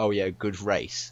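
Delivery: put-on sarcastic tone. Retelling a driver interrupting a rival's interview: imitating Massa sarcastically. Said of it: "obviously sarcastically".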